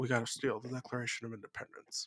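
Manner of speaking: very low, hushed movie-star voice. Picking an answer just to do a Nick Cage voice. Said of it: "the main Nick Cage voice and be like".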